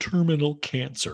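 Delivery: tearful, choked-up high voice that catches. Retelling a dying friend's news: mock choking up. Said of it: "She chokes up".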